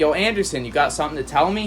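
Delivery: ordinary delivery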